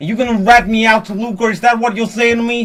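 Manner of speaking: put-on New York gangster voice. Playing a character in an improvised theme-park ride scene: New York mobster accent. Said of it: "can they do like a like a New York kind of like mobster?".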